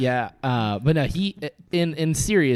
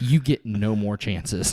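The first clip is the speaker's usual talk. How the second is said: put-on serious tone, lower; 3 semitones lower than usual. Retelling a warning he got in high school, imitating a serious tone. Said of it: "He gets real serious".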